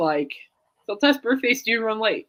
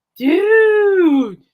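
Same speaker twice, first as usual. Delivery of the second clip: high-pitched, loud calling voice. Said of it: "so I go".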